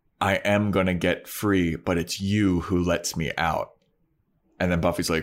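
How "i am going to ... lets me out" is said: whispering voice. Retelling a scene where a villain speaks in someone's ear: imitating a character whispering. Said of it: "he whispers in her ear".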